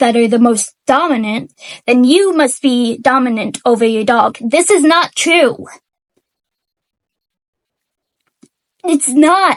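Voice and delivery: angry, mad tone. Explaining that a claim about dogs is false, angry. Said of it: "Sorry, I'm really mad".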